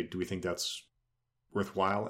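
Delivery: ordinary delivery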